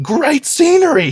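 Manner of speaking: very high, loud, forced through clenched teeth. Voicing a character's remark, said through gritted teeth. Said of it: "he says through gritted teeth".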